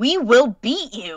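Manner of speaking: high, very loud fighting shout. Playing a character in a dream, defying an enemy: character yelling. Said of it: "she yells at her and she goes".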